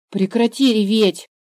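angry, cross tone. Adam speaks to the crying girl Eve, angry. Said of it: "рассердился Адам".

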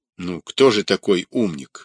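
plain

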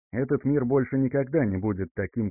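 ordinary delivery, nothing marked

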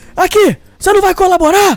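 put-on high yelling. Recounting a hearing where the judge banged the table, retelling a judge's shout. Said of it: "mas gritando".

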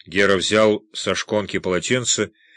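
plain reading voice

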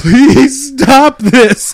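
shrill, very loud, high sobbing cry. Retelling how a chased woman fell and begged her chaser: imitating a crying plea. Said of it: "crying, like".

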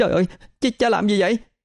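alarmed, frightened. Sixteen-year-old Khuê runs out as her father strikes her mother, panicked. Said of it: "hốt hoảng chạy ra".

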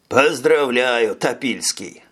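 biting, caustic sarcasm. The older man congratulating another man on hearing the fugitive is dead, caustic. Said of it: "язвительно произнес старший".

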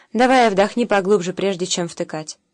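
plain reading voice

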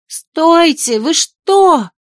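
sharp, high, sudden cry of alarm. A woman reacts after a man demands the truth: exclaiming. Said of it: "воскликнула Шарлотта".

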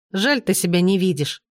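ordinary talk

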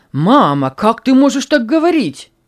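bitter, loud exclamation with rising pitch. A son responds to his mother's words, exclaiming bitterly. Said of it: "С горечью воскликнул сын".

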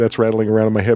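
ordinary talk, nothing marked

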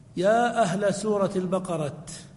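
normal talking voice

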